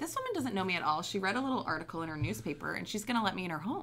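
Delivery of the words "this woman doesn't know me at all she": usual speaking voice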